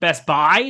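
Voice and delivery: Midwest accent with stress on buy. The Midwest way of saying the store name: stress on Buy in Best Buy. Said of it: "where we accent buy".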